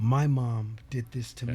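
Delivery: ordinary delivery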